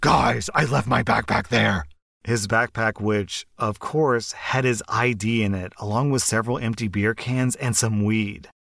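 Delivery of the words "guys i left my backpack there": rough, gravelly superhero voice. Telling a story about a group of friends, quoting one nicknamed Batman in a Batman voice. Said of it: "I should use my Batman voice for this".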